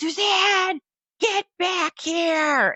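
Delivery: put-on male yelling. Telling a story about a long line, retelling a man's yell. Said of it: "I can hear him yelling".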